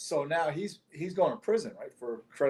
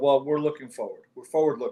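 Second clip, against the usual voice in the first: plain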